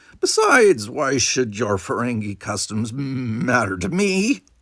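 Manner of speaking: contemptuous, dismissive, scornful sneer. Narrator reads the alien Quiltix answering Quark, with an audible sneer. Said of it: "with an audible sneer".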